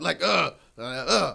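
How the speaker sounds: loud ad-lib style grunting.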